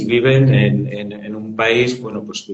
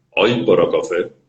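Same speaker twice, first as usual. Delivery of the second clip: grave, deep, low baritone voice; 5 semitones lower than usual. Retelling a stooped man begging passers-by for coffee, in a deep baritone voice. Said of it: "una voz grave de barítono".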